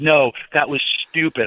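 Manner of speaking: furious, jacked-up, angry scolding outburst. Retelling his partner yelling at him over a move, retelling an angry outburst. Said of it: "so angry and so jacked up".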